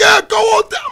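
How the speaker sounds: shrill, very high shout. Retelling what the guy directing traffic said: imitating someone yelling. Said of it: "the guy was yelling".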